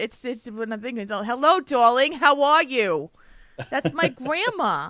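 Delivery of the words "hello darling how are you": put-on New York accent, slower. Speaker imitates their grandma's greeting, in grandma's New York accent. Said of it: "I could do the New York accent".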